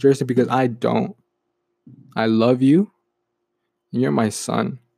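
imitated whisper. Retelling a father's words spoken into his ear: imitating a whisper. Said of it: "he says that whispering in my ear".

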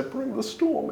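under the breath. As the group leaves the sheriff's office, a man speaks under his breath. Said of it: "hear him under his breath say".

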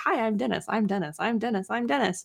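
play-acted gushing, eager, overly friendly bellhop voice. Retelling a bellhop who kept introducing himself, imitating an overly friendly bellhop. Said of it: "overly nice and like overly friendly".

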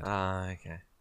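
deflated, let-down, disappointed tone. Reacting to hearing the other speaker hasn't shaved their head: sounding disappointed. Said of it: "You sound really disappointed".

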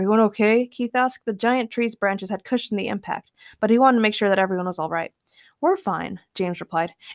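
ordinary delivery

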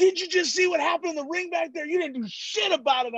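angry man, furious rant. Retelling a grown man yelling in his face: imitating an angry man. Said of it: "this guy was so mad".

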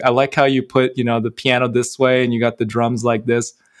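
plain

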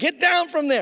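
very high, shouted yell. Retelling warning boys on a high wall to come down: imitating yelling at campers. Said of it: "I'm yelling at them".

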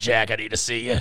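deep, heavy, raspy heavy-smoker voice. Quoting a character he loves in every scene, sixty-pack-a-day smoker voice. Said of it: "Just that like 60 pack a day fucking voice".

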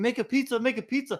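very high-pitched scream. Retelling a guy yelling while the speaker could not stop skiing: imitating someone screaming.

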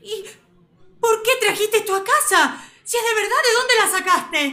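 shouting. Demanding to know why Ele brought a real skull home, yelling. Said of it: "no me grites".

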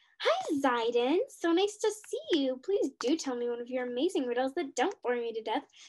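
fake, forced, put-on peppy cheerful voice. Greeting Zaiden after preparing a peppy voice, in a put-on peppy voice. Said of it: "just give me a second to prepare my peppy voice".

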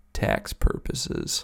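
rough, creaky little guy voice. Retelling a stand-up bit where a little guy answers: little guy's different voice. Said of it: "little different voice".

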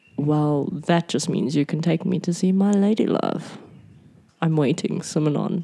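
whispering voice. Speaking in character to a close enemy: whispering in character. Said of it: "I am going to whisper".

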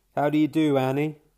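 charming voice. Narrator greets Annie, who is concentrating on her work: most charming voice. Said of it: "I say in my most charming voice".

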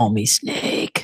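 spoken in a whisper. Imitating the eye-patched antihero's line from the movie: whispering Snake Plissken impression. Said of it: "and whispering".

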